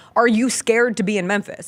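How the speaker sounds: mock direct, pointed, point-blank delivery. Retelling a photographer's question during an interview: imitating someone asking loudly. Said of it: "not yells, ... but, like, loudly says".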